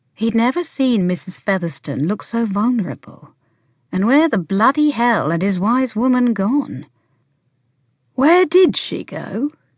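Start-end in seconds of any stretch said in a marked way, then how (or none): 8.2-9.5 kind, gentle tone, slightly raised pitch. A man asks a vulnerable woman where someone went, gently. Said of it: "he asked gently".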